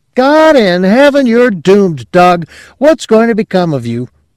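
piercing, shrill, very high rising cry. Reading a story, a woman scolds a man who won't listen: piercing, rising voice. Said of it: "Her voice rose piercingly".

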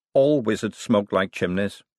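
plain

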